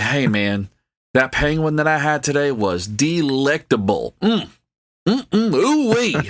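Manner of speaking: put-on exaggerated Southern drawl, deep and swooping. Imagining an orca talking about its meal: put-on deep Southern drawl. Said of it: "a real deep Southern drawl".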